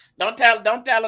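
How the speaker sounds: mock cry of pain, pitched way up, loud.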